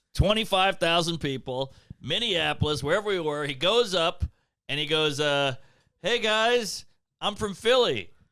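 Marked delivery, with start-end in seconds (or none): 6.0-8.1 scared, trembling, pitched-up nervous voice. Retelling a show before twenty-five thousand people, imitating Reggie trembling. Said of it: "Reggie's trembling".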